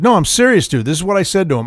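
normal talking voice

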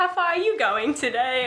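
put-on Australian accent. Imitating an Australian teammate asking a question: imitating an Australian accent. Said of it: "Wait, that's British".

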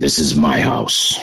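eerie, creepy, very low-pitched voice. Retelling a voice caught on a digital recorder, in a creepy voice. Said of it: "in a real creepy voice".

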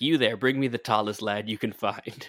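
put-on commanding, order-giving voice. Imitating Dennis calling for the tallest lad: imitating Dennis. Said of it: "Dennis being like".

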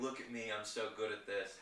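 normal talking voice

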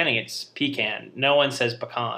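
plain

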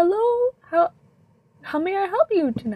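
put-on very high, swooping, slow, drawn-out old man voice. Pimbley, a very old man, comes out of the back to a customer; Pimbley's old man voice. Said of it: "very slow, very old man".

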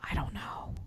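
hushed, very quiet whisper under the breath. Talking over an episode with another speaker: whispering. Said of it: "Why are we whispering?".

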